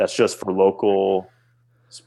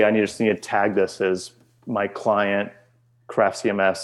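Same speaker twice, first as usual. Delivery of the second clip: usual speaking voice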